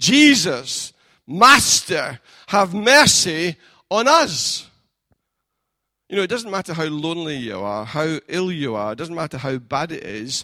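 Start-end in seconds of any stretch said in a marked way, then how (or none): 0.0-4.7 loud, high cry, slowing at the end. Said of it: "they begin to shout out to Jesus".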